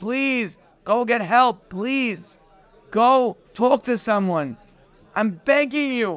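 play-acted, imploring, pleading, begging voice. Retelling pleading with people to go get help: retelling own past pleading. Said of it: "how many people I pleaded with".

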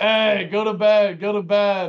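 loud, very slow, dragged-out yelling. Retelling waking on the bathroom floor to someone: imitating Pat yelling. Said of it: "it was Pat yelling at me".

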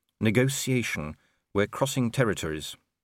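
plain

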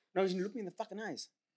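mock aggressive, hostile, menacing tone. Telling the other player to look them in the eyes: mock hostile. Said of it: "why are you so hostile?".

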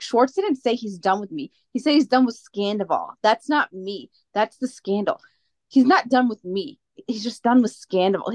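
ordinary delivery

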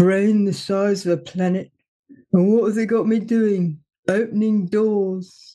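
gloomy, flat robot monotone, drawn out, utterly joyless. Describing the paranoid android who runs the spaceship: Marvin the Paranoid Android voice. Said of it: "he is Eeyore".

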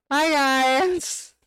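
high voice cracking and breaking. Signing off at the end of the episode, voice cracking. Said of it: "Voice crack!".

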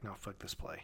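very soft, low, dismissive aside.

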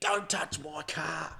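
slow, stretched-out, high screaming cry. Retelling how a bloke screamed from far away: imitating someone screaming. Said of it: "just screaming".

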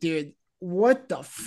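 irate, very angry, cut-off, half-finished cursing outburst. Retelling own reaction after a phone call: imitating own irate outburst. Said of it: "I was so ira-".

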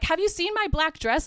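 mock, high, called-out yelling. On the funeral morning, the mom is looking for her dress; imitating a yell. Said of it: "Like she's yelling".

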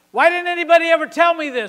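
very loud, high, tearful yell. Retelling standing in the living room after reading a book: retelling a tearful yell. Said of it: "and I yelled".

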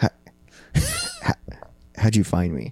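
soft, indistinct, half-swallowed mumble. Retelling a talk with a man at night, mumbling. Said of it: "I look at the blanket and I mumble".

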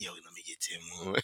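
barely audible, very quiet, sneaky whisper. Retelling asking for ten more dollars at a party: imitating a whisper. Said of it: "I'm trying to whisper".

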